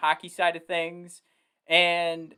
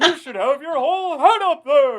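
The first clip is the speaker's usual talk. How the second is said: very high, loud puppet-show voice; 9 semitones higher, 7 dB louder than usual. Speaker trying out a Statler and Waldorf voice. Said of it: "now I'm gonna try and do is Statler and Waldorf".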